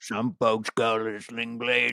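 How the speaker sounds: put-on Southern drawl. Doing a Sling Blade character voice on request: Billy Bob Thornton Sling Blade voice. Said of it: "I'll always do Billy Bob Thornton".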